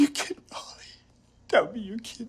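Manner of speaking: crying, sobbing through the words, tearful. In a drama, a man reacts to being told it was all a game: crying. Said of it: "[he cries]".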